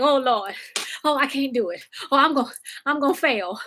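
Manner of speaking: frantic, flustered, panicked fretting to oneself. Retelling rushing to log in on time: retelling own panic. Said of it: "I'm panicking".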